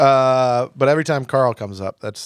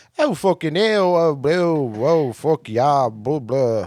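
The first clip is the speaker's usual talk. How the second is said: bad, clumsy, slow put-on British accent; 3 semitones higher than usual. Speaker imagines meeting a woman over there and voices her; bad put-on accent. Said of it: "I'm not good at accents".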